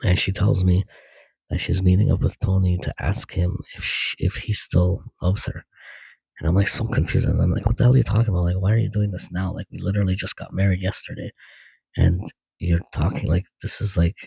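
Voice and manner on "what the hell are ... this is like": usual speaking voice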